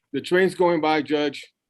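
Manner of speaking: speaking up over noise. A lawyer addressing the judge in a hearing as a train passes, shouting over a train. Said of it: "that's why I'm shouting".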